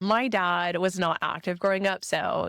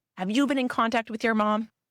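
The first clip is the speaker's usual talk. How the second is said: mock angry, furious, accusing demanding tone; 4 semitones higher than usual. Retelling an angry parent's question: imitating a screaming father. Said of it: "he comes at me and he's screaming".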